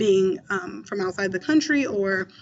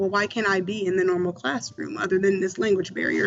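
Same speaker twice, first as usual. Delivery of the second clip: ordinary delivery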